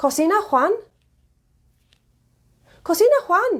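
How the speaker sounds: pitch rises at the end, on Juan. Showing how a statement becomes a question, rising intonation at end. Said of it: "if I rise my intonation at the end".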